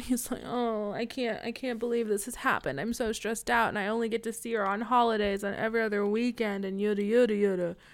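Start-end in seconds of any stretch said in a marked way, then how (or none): 0.5-6.7 put-on crying voice. Retelling a dad upset that his daughter is gone: imitating someone crying. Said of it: "Dad starts, like, crying".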